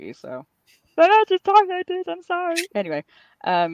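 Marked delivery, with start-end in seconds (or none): 1.0-2.6 loud, high-pitched silly puppet voice. A speaker shows the voice kept for goofy moments; Kermit the Frog voice. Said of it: "my Kermit voice is I reserve for when I'm feeling a little bit goofy".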